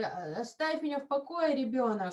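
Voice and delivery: ordinary talk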